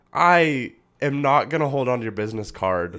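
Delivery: ordinary talk, nothing marked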